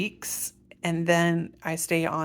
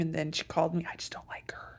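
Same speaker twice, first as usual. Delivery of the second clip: hushed, very soft under-the-breath whisper. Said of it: "I don't know why I'm whispering".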